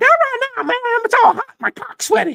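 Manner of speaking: real high, loud squealing voice. Retelling what a man said when asked for a few minutes: Dave Parker in high voice. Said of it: "Real high voice".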